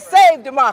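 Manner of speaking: ordinary talk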